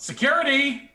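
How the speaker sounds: very high, loud calling-out voice. Calling for security in character after snapping fingers: calling out. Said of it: "snap my fingers and call out".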